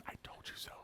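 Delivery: very quiet, breathy, under-the-breath whisper. Retelling running outside after the toilet overflowed: whispering. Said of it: "So I whisper it".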